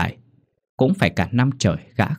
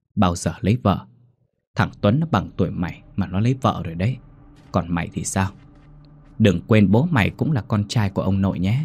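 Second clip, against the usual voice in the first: plain reading voice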